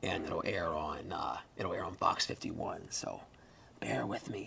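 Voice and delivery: whispered speech. Explaining to viewers that a colleague is recording nearby: whispering. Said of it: "I'll whisper while we're, while we're recording this".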